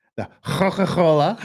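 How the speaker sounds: loud mock Scouse accent.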